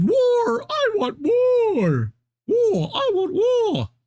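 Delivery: "war" wailed very high, slow and drawn-out. Reading out a reaction to an attack: imitating Suella Braverman screaming. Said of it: "Suella Braverman screamed".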